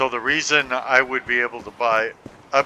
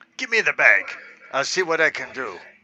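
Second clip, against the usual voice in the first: put-on cadence with swooping pitch. Answering a game character while imitating the character's way of talking. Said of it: "I don't know why I'm trying to talk like you".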